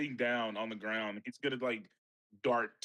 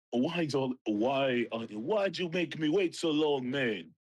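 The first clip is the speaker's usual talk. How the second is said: put-on Jamaican-accented voice; 2 semitones higher, 3 dB louder than usual. Wilmon, deadpan silent for weeks, finally speaks up, in a Jamaican accent. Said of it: "why the fuck are you talking like that?".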